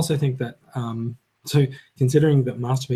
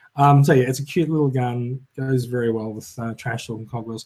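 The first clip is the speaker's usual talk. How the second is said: ordinary talk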